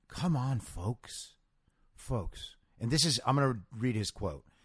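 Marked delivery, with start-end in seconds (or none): 0.1-1.3 very quiet, soft, sensitive pleading voice. Describing him at a podium begging people to take vaccines, mock-sensitive quiet Joe Biden voice. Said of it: "He puts on this very quiet and sensitive voice".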